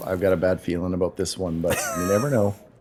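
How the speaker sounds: quiet half-whispered. Speaking in character, quietly to another character: half-whispering. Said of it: "whisper to".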